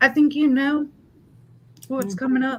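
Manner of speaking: on the verge of tears, about to break down. Giving a card reading to another speaker, on the verge of crying. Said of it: "and I'm gonna cry".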